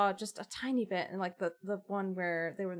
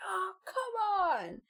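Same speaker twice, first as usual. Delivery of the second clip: put-on, very high, pumped-up, angry-sounding yell; 12 semitones higher than usual. Retelling what she yells during her first match: imitating an angry-sounding yell. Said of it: "that's what she yells".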